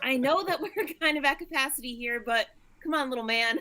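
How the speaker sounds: yelling. Calling out in character during a storm at sea: yelling out in character. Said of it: "I'm just gonna yell out to Anomio".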